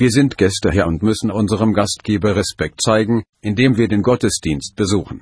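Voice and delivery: ordinary delivery, nothing marked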